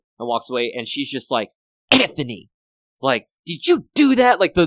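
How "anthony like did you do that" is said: mock scolding mother voice, higher and louder. Retelling a scene from the film: imitating a mom scolding her son. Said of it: "the delivery she gave was just like a mom getting onto her son".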